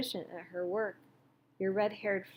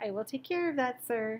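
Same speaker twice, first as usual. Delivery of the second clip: bitter, cruel, sneering sarcastic tone; 4 semitones higher than usual. Reading a novel, Jonas mocks the instructions he heard: cruel sarcastic mimicking voice. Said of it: "Jonas mimicked in a cruel, sarcastic voice".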